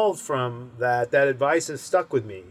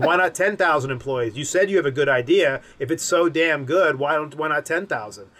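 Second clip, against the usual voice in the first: ordinary talk, nothing marked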